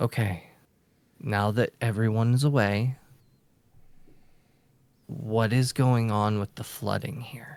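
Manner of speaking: low, quiet, hushed, kept-down voice. Asking someone about the flooding once everyone's away: hushed tone. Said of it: "I'm gonna hush my tone".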